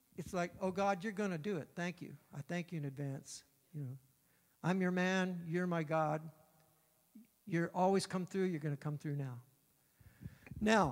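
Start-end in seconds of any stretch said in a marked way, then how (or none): none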